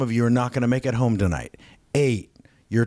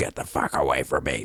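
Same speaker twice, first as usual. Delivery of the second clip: very low, grumbly, growling voice; 10 semitones lower, 4 dB quieter than usual. Retelling what a man said back to the pastor, low grumbly growling voice. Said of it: "in like this low, grumbly, sort of growling voice".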